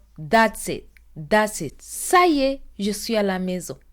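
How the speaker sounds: plain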